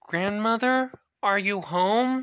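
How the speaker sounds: high, timid calling out. Narrator reading a girl calling into her grandmother's open house, timid call. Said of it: "she called timidly".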